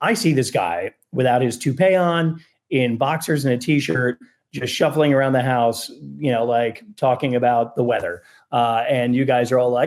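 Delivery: plain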